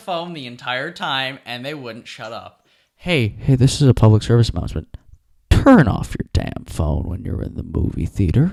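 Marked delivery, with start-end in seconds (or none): 2.9-8.5 booming, low, loud pilot intercom announcement. Complaining about two women on their phones in a movie theater, in an airline pilot announcement voice. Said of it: "sounds like a pilot on an airplane".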